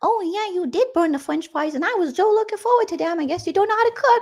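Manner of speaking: very high put-on baby voice. Passive-aggressively complaining about burnt fries, in a put-on baby voice. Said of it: "making the baby talk".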